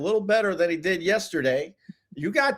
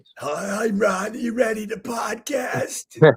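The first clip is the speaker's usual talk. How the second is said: very slow, raspy early-morning voice; 2 semitones higher than usual. Retelling a morning phone call to a co-host: imitating own raspy morning voice. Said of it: "with his, you know, raspy voice".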